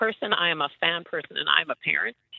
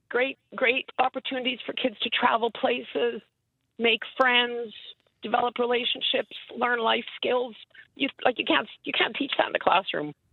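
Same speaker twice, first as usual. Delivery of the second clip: slightly emotional voice, pitched up; 5 semitones higher than usual. A guest answering the host's question on the show, a little emotional. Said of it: "Do I hear a little em- emotion in your voice there".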